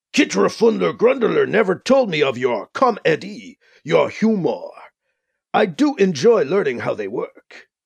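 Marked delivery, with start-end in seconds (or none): none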